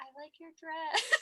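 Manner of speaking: muttered under the breath. Retelling the groom's remark at the aisle: imitating Matt saying it under his breath. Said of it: "under his breath".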